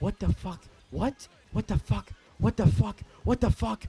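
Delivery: acted-out, rattled, freaked-out outburst of disbelief. Retelling own reaction at work: imitating own freaked-out reaction. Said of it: "I'm tweaking".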